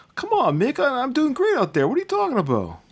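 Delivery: very high, light, swooping, swinging put-on inflection. Showing how a performer embraces the skit, talk to Mick with kind of a Rocky inflection. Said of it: "you can kind of hear that Rocky inflection".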